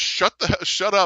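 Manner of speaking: high, muttered under the breath. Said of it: "you hear her say under her breath".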